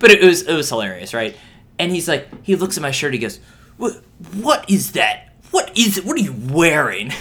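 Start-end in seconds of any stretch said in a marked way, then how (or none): 3.8-7.1 play-acted appalled, disgusted priest voice, insistent and repeated. Retelling the priest's question about a jersey: imitating a disgusted priest. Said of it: "He was still disgusted".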